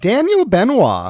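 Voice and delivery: flamboyant, showy flourish. Introducing one of your two friends at the start of the show, with a bit of flair. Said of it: "still with that bit of the flair".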